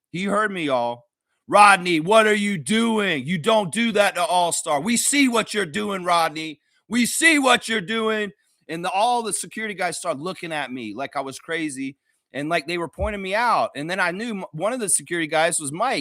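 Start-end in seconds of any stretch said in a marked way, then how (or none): 1.5-8.3 put-on, loud yelling at the top of the lungs. Retelling yelling at Rodney to be heard, as loud as possible. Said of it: "I yelled as loud as I could".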